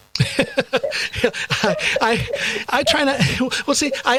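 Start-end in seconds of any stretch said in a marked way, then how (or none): 1.7-4.2 high-pitched talk with laughter through the words. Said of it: "I'm laughing".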